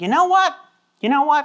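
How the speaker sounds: sudden, high, bright exclamation, popped out.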